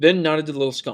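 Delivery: plain reading voice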